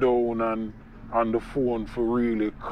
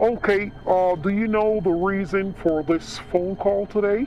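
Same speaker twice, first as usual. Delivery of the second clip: put-on American accent with the pitch raised; 9 semitones higher, 4 dB louder than usual. Showing how a prize-notification phone call goes: put-on American accent. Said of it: "I would use a tone of voice of American accent".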